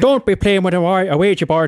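put-on Irish accent. Asked how Irish goes, the speaker tries it out: put-on Irish accent. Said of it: "How does Irish go?".

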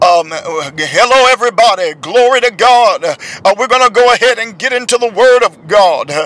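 churchy preacher voice, drawn-out "hello". Mocking preachers who put on a voice, doing the preacher voice. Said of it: "I can't stand the preacher voice".

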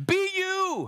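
high, full-throated, unapologetic yelling. Addressing the listeners and refusing to apologize for the volume, yelling. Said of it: "And yes, I'm yelling".

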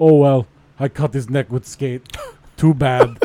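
loud, scornful, mocking broken-English voice. Imitating a hockey player who cut someone with a skate: imitating Olli Jokinen in broken English. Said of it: "That is how they play in Russia".

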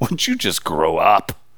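low, soft, slow, disappointed tone. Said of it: "I can hear the disappointment in his voice".

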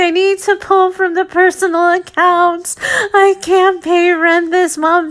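high-pitched voice, speaking through sobs. Retelling a month your private practice couldn't pay rent, acting out your past sobbing. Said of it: "going to him sobbing and saying like".

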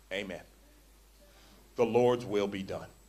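put-on voice, wet with tears, weepy. Retelling a man's reply after hearing hard advice: imitating someone in tears. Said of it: "in tears".

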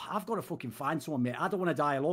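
plain

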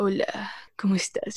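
put-on macho, breathy, seductive voice with Colombian accent. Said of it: "macho seductor, pero con todo este acento colombiano".

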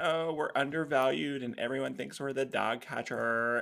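put-on California voice. Speaking with a guest, voicing animal control's complaint in a California Starbucks voice. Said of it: "that's my California Starbucks voice".

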